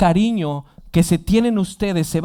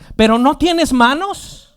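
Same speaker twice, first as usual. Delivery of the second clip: high-pitched scolding yell; 8 semitones higher, 3 dB louder than usual. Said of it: "ella le empezó a gritar".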